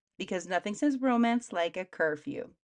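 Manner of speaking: ordinary talk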